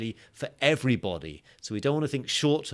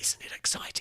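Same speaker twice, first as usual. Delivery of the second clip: hushed whisper, quieter. Summarizing the video's strategy for viewers, whispering. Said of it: "Why am I whispering?".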